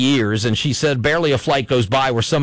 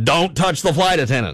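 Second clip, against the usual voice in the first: curt, sharp, cutting tone; 2 semitones higher than usual. Retelling a flight attendant's rebuke to someone who touched them, mock loud and sharp. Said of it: "very loudly and very sharply said".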